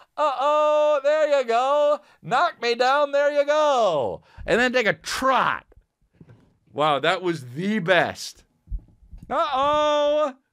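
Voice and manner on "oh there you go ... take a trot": put-on high drunk announcer voice, drawn-out "go". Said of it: "by the way he says trot".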